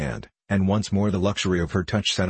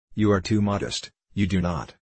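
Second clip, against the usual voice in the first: usual speaking voice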